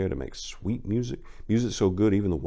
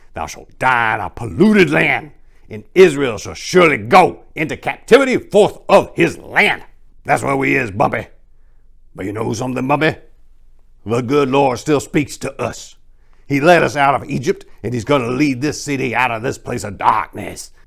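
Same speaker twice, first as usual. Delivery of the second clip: put-on very loud, raspy elderly preacher voice; 5 semitones higher, 11 dB louder than usual. An old man beside him chimes in, speaking to bumpy; raspy old man's voice. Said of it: "[name] helped the grizzled blind apricot [name] down onto one of the folding chairs, / [name] didn't pay him no mind and kept going. / The old man next to him chimed in with his raspy voice and, / The".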